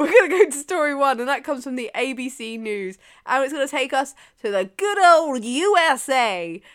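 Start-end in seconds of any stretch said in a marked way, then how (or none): 4.8-6.5 failed, botched attempt at an American accent. Introducing the first news story, failed american accent. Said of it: "Don't know what that accent was, because it wasn't American".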